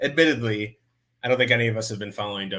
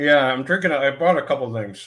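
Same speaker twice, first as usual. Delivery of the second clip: talking with mouth full, much higher pitch; 5 semitones higher, 5 dB louder than usual. Streamer answers a question about drinks while eating Christmas candy, talking with mouth full. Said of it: "now I'm chewing with my mouth full".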